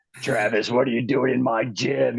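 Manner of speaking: croaking frog voice, drill instructor style. Retelling being grabbed at the gym by a drill instructor, the speaker uses a frog voice. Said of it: "in that same, you know, frog voice".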